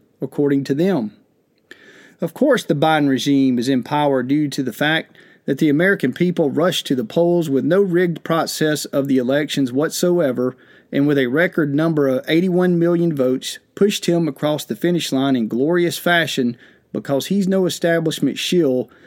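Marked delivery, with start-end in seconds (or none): none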